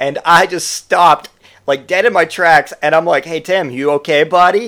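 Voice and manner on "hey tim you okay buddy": put-on child-directed speaking style. Retelling checking on a drunk friend: talking as to a six-year-old. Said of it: "talking to him as I would talk to my six-year-old".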